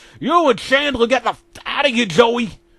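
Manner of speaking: high-pitched, furious, enraged yell. Reading a story aloud, a character orders two others out: angry yell. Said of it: "Ross yelled in the most angry voice".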